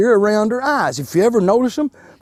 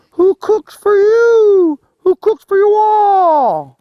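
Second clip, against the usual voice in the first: very high, drawn-out owl hoot, "you" stretched; 10 semitones higher, 5 dB louder than usual. Describing what you hear at the edge of the woods at nightfall: owl call imitation. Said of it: "you'll hear an owl make a sound that sounds something like this".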